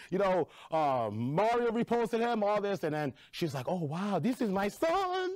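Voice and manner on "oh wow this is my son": put-on Nigerian accent, much higher, slower. Guest retelling his mom's reaction to his viral dancing, imitating his nigerian mom. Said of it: "I just heard it in your mama voice".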